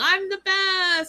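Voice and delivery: put-on shrill, very high, boastful, triumphant scream. Retelling how a contestant screamed after getting his card: imitating someone screaming. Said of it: "he's screaming".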